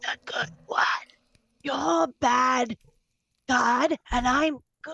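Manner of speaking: hushed, acted aside. Acting out a character's aside to Tali: whispering in character. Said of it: "whisper to Tali and be like".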